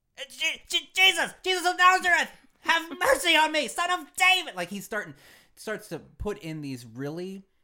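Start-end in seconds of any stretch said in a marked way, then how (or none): 0.2-4.6 very high, very loud, shrill frantic pleading. Acting out blind Bartimaeus hearing that Jesus is near: acting out Bartimaeus going nuts. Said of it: "he goes nuts".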